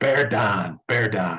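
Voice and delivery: put-on low Pittsburgh accent, "down" pronounced "don". Asked for his best McAfee voice, speaker imitates it: McAfee Pittsburgh-accent impression. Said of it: "That's my best impression".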